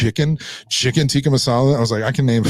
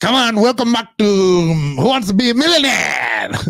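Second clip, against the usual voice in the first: put-on Indian accent, very high, game-show host style; 9 semitones higher, 3 dB louder than usual. Addressing his buddy during a back-and-forth, indian guy voice. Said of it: "Your Indian guy voice is pretty fun".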